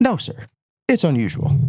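polite clerk voice. Urged by the others to do the impression, the speaker imitates the clerk's reply. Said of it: "a better impression of the clerk".

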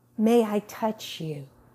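tender, gentle, mild voice. Recalling a woman leaning over to ask permission, imitating her gentle voice. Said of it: "In such the gentler voice".

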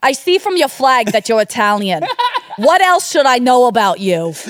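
put-on thick New Jersey accent. Asked to redo the line in one, the speaker switches to a thick Jersey accent. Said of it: "Can you do it in a very thick Jersey accent".

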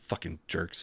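muttered under breath. Retelling what a woman said as she grabbed the receipt, muttered under breath. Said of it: "she said something under her breath as she walked away".

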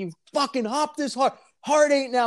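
play-acted high-pitched screaming. Speaker retells screaming at a guy during a roll: retelling a scream. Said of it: "I'm like screaming at the guy".

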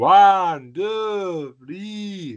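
put-on high Eastern European accent, two words stretched. Trying out voices on a podcast, in an Eastern European accent. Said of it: "I apologize to all the Eastern Europeans".

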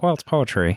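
put-on voice, pitch lifted, relaxed and easy. Quoting him on repeating stanzas in Star Wars: George Lucas voice. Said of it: "his George voice".

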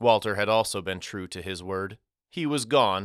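ordinary delivery, nothing marked

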